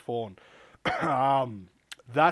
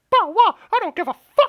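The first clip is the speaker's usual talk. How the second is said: very high-pitched and loud voice; 12 dB louder than usual. Joking that Mickey Mouse jumps in on the awards talk: Mickey Mouse voice. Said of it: "you just got Mickey Mouse just jumping in, just like".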